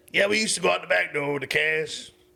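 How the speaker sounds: put-on Louisiana accent, coach voice. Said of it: "I'm gonna do the voice 'cause I love the voice".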